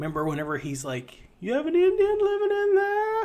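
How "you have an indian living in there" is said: very high, loud, squeaky put-on character voice. Doing an impression of a man's remark, in a put-on impression voice. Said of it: "That's my impression of him".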